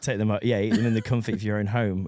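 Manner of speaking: usual speaking voice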